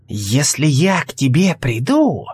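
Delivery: slow, drawn-out hissing. Narrator reads Selda's reply to Alvis, hissed. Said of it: "прошипела Сельда".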